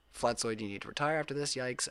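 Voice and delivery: ordinary talk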